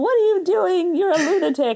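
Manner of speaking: very high, exasperated yell. Retelling a family Thanksgiving scene: imitating dad yelling. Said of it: "my dad would be yelling".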